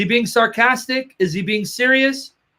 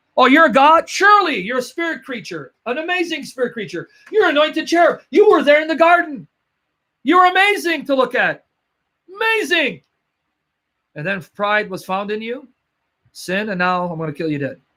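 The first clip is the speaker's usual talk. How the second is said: scornful, taunting, sarcastic voice with mock praise; 2 semitones higher than usual. Acting out god mocking someone called an anointed cherub: mocking voice of god. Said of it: "as opposed to mocking him?".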